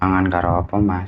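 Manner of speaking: hushed, barely audible soft mumble. Retelling how a food stall seller answered: imitating a very quiet voice. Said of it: "Pelan banget".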